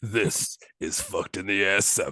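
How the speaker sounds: dramatic movie trailer voiceover voice. Joking about doing porn trailer voiceovers, movie trailer voiceover voice. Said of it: "you already got it".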